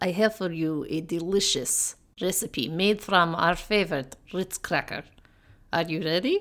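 fake Russian accent. Presenting a recipe in a comedy bit, bad Russian accent. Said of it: "speak in bad Russian accents".

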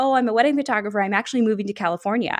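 very confident, certain and self-assured tone. Retelling chats with strangers at a dog park: imitating own confident voice. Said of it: "I would very confidently just be like".

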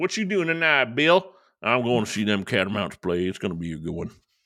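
put-on Southern American accent, country narrator style. Joking about the word catamount, the speaker does a put-on Southern accent. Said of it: "sounds cool in a Southern accent".

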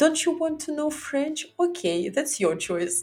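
high, mock-sweet, passive-aggressive app-style voice.

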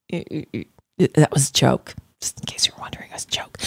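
whispered voice.

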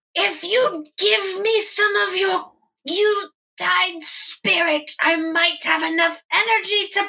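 ringing, very high-pitched shout. Voicing Majestic Yule calling out to the party: Majestic Yule shouting. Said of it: "Majestic Yule then shouts out".

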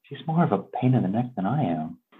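soft, close, half-whispered aside into an ear. Playing a character leaning close to another character: half-whispering in someone's ear. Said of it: "I'll kinda whisper in Lizzie's ear".

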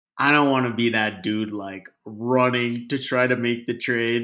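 ordinary talk

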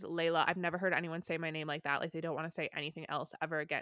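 ordinary talk

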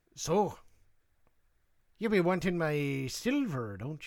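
leprechaun character voice. Answering how the red leprechaun would talk: red leprechaun voice. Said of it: "What would he talk like, the red leprechaun?".

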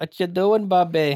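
put-on Minnesota accent. Asked to do their best Minnesota accent, the speaker tries a Minnesota accent. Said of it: "do your best Minnesota accent".

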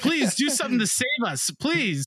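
high-pitched swooping yell. Describing a game scene where a character yells at you, imitating a character yelling. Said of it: "she's yelling at you like".

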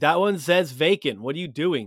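put-on yelling. Retelling how a girl in the line kept shouting at a man: retelling a girl yelling. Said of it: "So she just keeps yelling".

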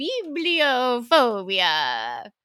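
voice like a fairy-tale witch. Trying out how to pronounce a word, witch voice. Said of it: "Uh I said that like a witch".

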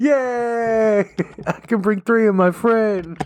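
giggly high chatter, laughing, drawn-out "yay". Joking about cheap tickets to the episode, laughing while talking. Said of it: "laughing at myself. I can't stop".

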